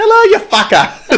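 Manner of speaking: put-on Massachusetts accent. Attempting a Massachusetts accent after saying it would be funny: put-on Massachusetts accent. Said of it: "I wish I could do a Massachusetts accent".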